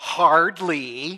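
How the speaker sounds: put-on very loud, dismissive, scoffing teenage drawl, hardly drawn out. Discussing tones of voice for the word hardly, imitating a teenager saying hardly. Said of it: "I think of a teenager going".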